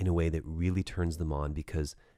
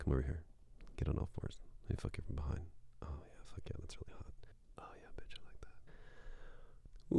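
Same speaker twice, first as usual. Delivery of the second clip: quieter, mock muttering under the breath; 2 semitones lower, 12 dB quieter than usual. Imitating a man talking during sex while his partner screams: imitating mumbling under breath. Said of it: "Stop speaking under your breath".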